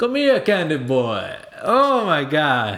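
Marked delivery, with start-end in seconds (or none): 0.0-1.3 high mad scientist voice, coaxing, rising toward the end. Imagining a mad scientist played by Keith David: Keith David voice. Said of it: "Can you imagine his voice just going".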